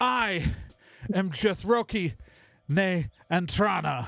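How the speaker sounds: high, proclaiming, royal-like fae prince voice. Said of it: "whatever voice comes out of my mouth right now".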